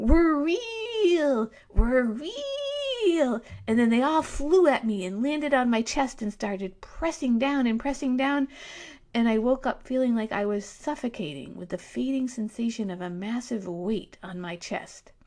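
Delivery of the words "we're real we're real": shrill, loud, very slow, drawn-out harpy crowing. Retelling a dream where women crowed back: imitating harpies crowing. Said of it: "evil harpy looks and crowed".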